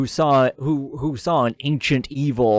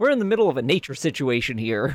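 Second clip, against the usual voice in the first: ordinary talk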